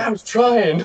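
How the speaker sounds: laughing through the words. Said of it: "He's like".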